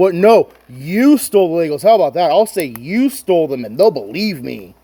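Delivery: yelled line. Retelling how a franchise owner yelled back at a YouTuber on video: imitating someone yelling. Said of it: "and he yells back".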